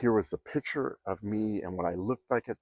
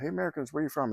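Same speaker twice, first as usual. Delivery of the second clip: put-on, high, calling-out shout; 7 semitones higher than usual. Retelling calling out to passing Americans in a subway hallway: imitating own past yelling. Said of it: "So I start yelling out".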